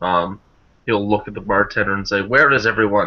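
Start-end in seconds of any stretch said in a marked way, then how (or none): 2.2-3.1 very loud, booming, carrying call-out voice. Narrator voicing a character asking the bartender in an empty tavern, very loud voice. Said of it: "In a very, like, loud voice".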